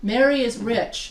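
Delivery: plain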